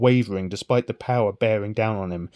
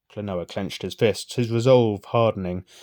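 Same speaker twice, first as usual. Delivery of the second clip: usual speaking voice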